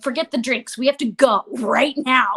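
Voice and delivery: put-on mortified voice, embarrassed and urgent. Retelling a son wanting to leave the coffee shop: imitating a mortified son. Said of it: "my son was just, like, mortified".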